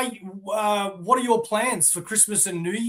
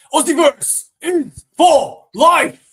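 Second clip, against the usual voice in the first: very slow, drawn-out, loud, pitched-up shout; 7 semitones higher, 10 dB louder than usual. Imagining a Comic-Con booth pitch to passers-by: imagined booth worker shouting. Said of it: "So why is he shouting at".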